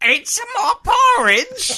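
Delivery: aggressive put-on Cockney, very high, very loud, swooping. Asked about cockney, the speaker demonstrates it: put-on cockney accent. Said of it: "the Cockney is like".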